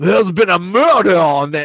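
put-on Savannah accent. Retelling a silly murder mystery game, imitating Michael's Savannah accent. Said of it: "those Savannah accents".

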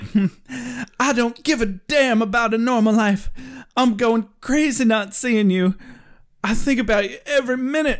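big, theatrical, heightened dramatic delivery. Doing a dramatic reading of Buffy's lines from a scene: dramatic reading as Buffy. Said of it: "so Buffy's like".

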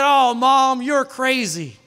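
put-on dismissive sarcasm. Retelling what he said to his mom back then, retelling his sarcastic remark. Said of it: "thinking sarcastically".

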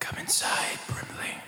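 soft, barely voiced whispered voice. Voicing a voice in a character's head, calling him inside: whisper. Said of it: "in a whisper".

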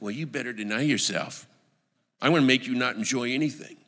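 put-on low, menacing, threatening tone. Showing how a command is not meant, in a mock-threatening tone. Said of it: "Jesus is not threatening you. ... he's not saying it like this".

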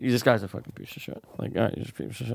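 whispering under breath. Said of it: "if I'm saying it under my breath".

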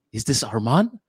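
acted, angry, cross, demanding tone. Retelling a phone call from the matchmaker: imitating an angry woman. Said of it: "this really angry woman".

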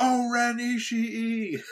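high, slow, drawn-out, movie-style yell.

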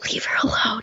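hushed whisper under the breath. Retelling a girl's reply to the whispering contestant: imitating someone whispering back. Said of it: "she literally whispers back".

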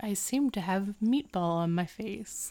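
very calm, soft and polite. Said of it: "very calmly and politely is like".

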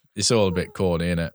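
ordinary delivery

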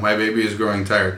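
ordinary talk

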